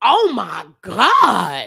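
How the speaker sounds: loud, swooping exclamation with God stretched out. Retelling stepping into the hallway after hearing a beating: retelling a loud exclamation. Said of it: "I said very loudly".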